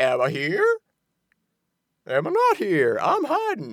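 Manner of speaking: swooping, sing-song put-on voice, pitch swinging widely all over. Retelling how Flynn sneaks around in the film: imitating Jeff Bridges as Flynn. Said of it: "impeccable impersonation you did".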